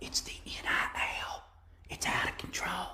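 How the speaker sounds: breathy, very quiet whispered speech. Mocking a man who whispers all the time, do a whispering Joe Biden voice. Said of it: "Why does he whisper all the time".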